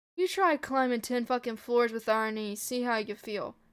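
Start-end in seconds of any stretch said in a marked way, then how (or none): none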